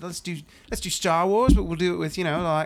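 put-on New Zealand accent. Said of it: "with his little Kiwi accent".

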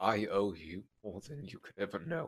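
hushed, very quiet half-whisper. A character half-whispers to the woman he has just bear-hugged, half-whispering. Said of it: "And he's gonna whisper".

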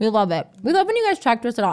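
talking with mouth full. Speaker inviting listeners to leave reviews, talking with mouth full. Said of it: "I have a cookie in my mouth".

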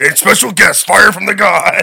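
shrill, booming put-on wrestling announcer voice. Retelling a TV ad for a band's show: WWF announcer voice. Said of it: "he sounds like a W W F".

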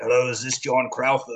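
put-on deep Eastern European voice. Retelling a surprise phone call, quoting the caller: Nikolai Volkov impression, deep Eastern European. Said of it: "a deep Eastern European sounding voice".

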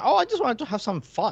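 put-on very high, failed Irish accent. Retelling a character's excuse to a co-host, in a bad Irish accent. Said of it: "I can't do an Irish accent".

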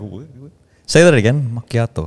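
teasing mock pronunciation of the word "macchiato". Retelling how people copy how he orders a macchiato: imitating people mocking his pronunciation. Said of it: "they try to copy me".

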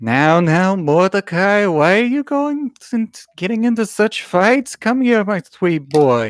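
high, fond, doting mother voice. Voicing the mother who calls to her son from behind: doting mother voice. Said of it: "the voice of your dear doting mother".

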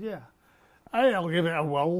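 put-on easygoing delivery in a Scottish accent. Quoting the anti-psychiatrist agreeing to be recorded: imitating R D Laing's Scottish accent. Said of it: "he said in his Scottish accent".

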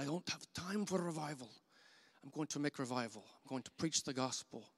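put-on heavy, laid-on German accent. Quoting what a man said back at Bible college, imitating thick German accent. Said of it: "in his thick German accent".

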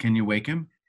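solemn, grave, very serious tone. Retelling a scene where the Captain asks the doctor: very serious. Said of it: "very serious".

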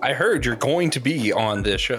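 firm, commanding, authoritative, very drawn out. Demonstrating how to tell a guest about the show, in an authoritative tone. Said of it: "the key is you got to sound authoritative".

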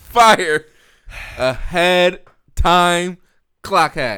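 exaggerated hype, loud, slow and drawn-out.

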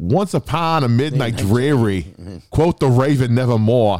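put-on Boston accent. Pitching a joke that Edgar Allan Poe was from Boston: Boston accent. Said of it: "he wrote that shit with an accent".

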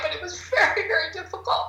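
crying voice. Recounting starting to miscarry during a very difficult time, crying. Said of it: "I don't mean to cry".

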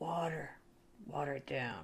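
theatrical voice. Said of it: "theater voice".

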